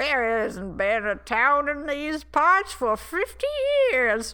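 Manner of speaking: put-on animated, loud, swooping old man voice. Telling a story, speaker voices what the staring man might say: old man voice. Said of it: "i love your old man voice".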